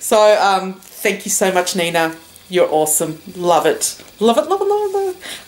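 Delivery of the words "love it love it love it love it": high-pitched, squealing excitement. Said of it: "Can't believe I'm so excited".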